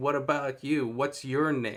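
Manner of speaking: put-on mocking, taunting tone. Retelling a film scene where the mystery man taunts Fred: imitating a mocking tone. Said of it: "it's that mocking".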